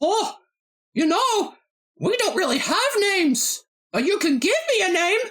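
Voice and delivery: squeaking way up high in pitch. Improvising as a talking cloud answering a question, in Mickey Mouse voice. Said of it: "I'm just doing the Mickey Mouse voice".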